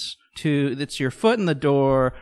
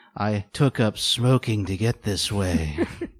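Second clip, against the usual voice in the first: sexy, sultry, seductive voice; 5 semitones lower than usual. Playing a woman a man praises on the radio, in a sultry voice. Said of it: "listen to your sultry voice".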